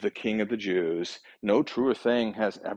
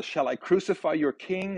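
high, mock sarcastic, disbelieving tone; 8 semitones higher than usual. Retelling a man's question to the crowd, retelling a mocking, incredulous question. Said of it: "mocking and incredulous".

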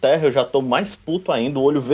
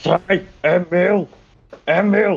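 very slow, growled, snarling words; 4 semitones higher than usual. Fighting the others over the boar, the speaker's character growls at them. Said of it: "Eu fico rosnando assim".

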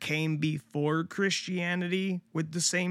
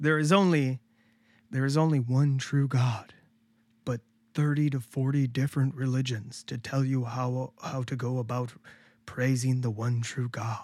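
pious, churchly holy voice, much lower pitch; 4 semitones lower than usual. Speaker does a mock sermon bit, in a holy voice. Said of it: "I like your holy voice there".

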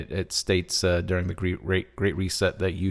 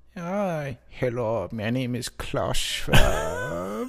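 slow, deliberate, pitched-up drawl in supervillain voice; 5 semitones higher than usual. Imitating Klaus Schwab after saying he sounds like a supervillain: Klaus Schwab supervillain voice. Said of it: "He looks and sounds like a supervillain".

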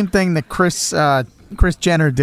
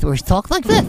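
put-on sweet, tiny, pitched-up toddler baby voice; 5 semitones higher than usual. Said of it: "the sweet little baby voice".

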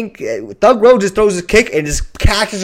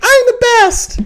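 put-on cute little voice, higher. Retelling how a fighter answered her coach: imitating Rose's cute voice. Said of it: "she just sounds like the cutest, like, little thing".

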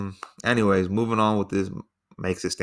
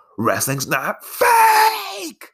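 shrill, all-out, swooping scream, put-on and stretched long; 4 dB louder than usual. Telling a story, the speaker acts out a dude's outburst; retelling a top-of-lungs scream. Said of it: "screams at the top of his lungs".

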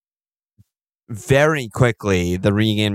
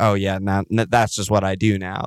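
usual speaking voice

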